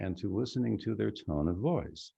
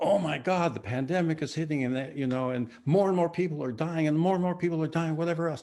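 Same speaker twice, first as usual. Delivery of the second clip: dramatic, doom-laden, alarmed, pitched-up newscaster delivery; 6 semitones higher, 3 dB louder than usual. Explaining how the news sounds nowadays, mimicking it: dramatic, horrified news tone. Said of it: "just the tone of my voice and me doing this, and how horrible it is".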